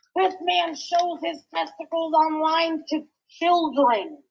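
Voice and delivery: shrill, high scream like a psychopath. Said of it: "starts screaming like a shrill psychopath".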